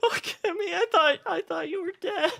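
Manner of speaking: very high, tearful, sobbing crying wail. Voicing a woman who finds Kimmy and starts crying: acted crying. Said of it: "starts crying".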